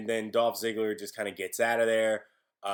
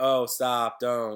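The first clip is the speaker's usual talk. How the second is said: lazy, offhand, careless, don't-care tone; 4 dB louder than usual. Showing the kind of voice used for a warning: imitating a careless, uncaring warning. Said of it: "just that kind of".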